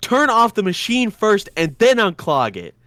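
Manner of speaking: loud, angry, pissed-off scolding. Retelling how he scolded a kid who reached into the grinder: imitating someone angry. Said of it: "he was pissed".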